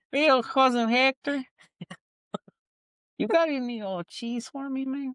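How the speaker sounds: very high, squeaky little cartoon mouse voice. Teasing the other speaker for saying a name like the Looney Tunes mouse: Looney Tunes cartoon mouse voice. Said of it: "You said it like the, the mouse from Looney Tunes".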